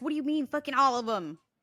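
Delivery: high-pitched mock alarmed, disbelieving, freaked-out blurt. Retelling how a man reacted to his friend's answer, imitating someone freaking out. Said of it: "And he started freaking out".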